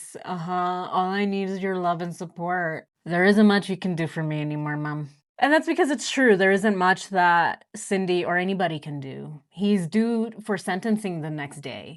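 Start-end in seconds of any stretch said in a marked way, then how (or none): 0.2-5.1 put-on monotone, flat and boring voice. Retelling a son's reply when his mother asks what he needs, imitating Chris's monotone voice. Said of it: "with his very monotone, boring voice".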